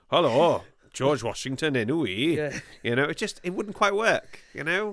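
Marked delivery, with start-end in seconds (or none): 0.1-2.3 put-on Welsh accent. Imagining the Hamilton characters with Welsh accents, a put-on Welsh accent. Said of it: "gave all the characters in Hamilton Welsh accents".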